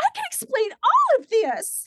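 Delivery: put-on flustered frantic voice, shrill, loud, swooping. Retelling a woman shown a folder of her convictions, imitating frantic explaining. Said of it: "she's flipping".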